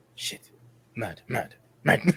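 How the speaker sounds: muttering under breath. A player voices his character's reaction while walking away, muttering under his breath. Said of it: "Like just kind of under his breath".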